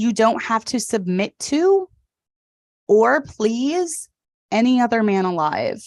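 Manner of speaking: very slow, deliberate, word by word. Speaker giving advice to wives, saying it very slowly. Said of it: "let me say this very slowly".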